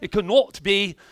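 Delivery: put-on British accent. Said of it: "was that a British accent that just came out?".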